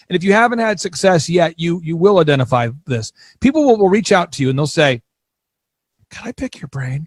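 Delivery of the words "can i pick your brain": mock sweet, polite, soft, breathy whisper. Describing how people ask to pick your brain, in a mock-nice tone. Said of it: "they usually say it in a nice tone like that".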